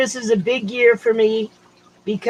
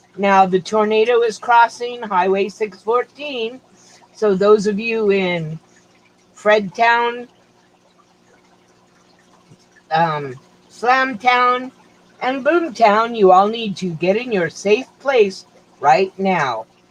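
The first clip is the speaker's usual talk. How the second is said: ordinary talk, nothing marked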